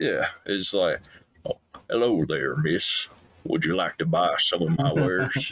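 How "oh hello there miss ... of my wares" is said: put-on old charming Southern gentleman character voice. Showing how the snake oil salesman character would greet someone: old Southern charmer voice. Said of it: "more of a old Southern charmer type thing".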